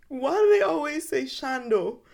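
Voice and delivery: put-on high, wide-pitched little boy voice.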